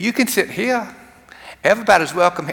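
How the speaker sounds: put-on southern American accent, pitched high. Retelling a Bible scene with Jesus cast as Jenny welcoming everyone: southern accent. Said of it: "I'm still talking in that southern accent".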